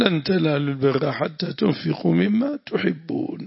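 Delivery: ordinary delivery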